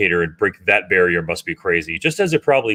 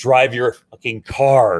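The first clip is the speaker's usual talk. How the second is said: put-on yell, higher; 4 semitones higher than usual. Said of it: "the number one thing I yell at is".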